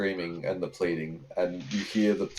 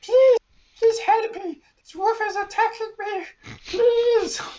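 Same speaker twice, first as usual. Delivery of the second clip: very high, loud, terrified pleading in goblin voice; 6 dB louder than usual. Game master voices a goblin, dragged by a wolf, begging the players: terrified goblin pleading. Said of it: "you've got this goblin who's who's terrified".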